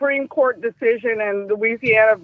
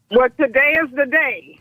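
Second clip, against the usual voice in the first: plain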